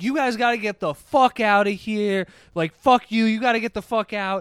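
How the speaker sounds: put-on hostile ranting, mild yell, scream only suggested. Retelling how a guy came out and started screaming at friends: imitating a guy screaming. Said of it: "starts screaming at them".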